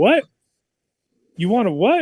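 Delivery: loud, high, stunned shocked disbelief. Retelling how a guy reacted to a taco order: imitating a shocked voice. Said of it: "you could hear the shock on his voice".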